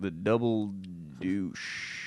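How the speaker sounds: mock baffled, uncertain reading aloud, sounding it out. Imitating an actor confused while reading a bar sign: imitating a confused reader. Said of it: "maybe he's looking at confused".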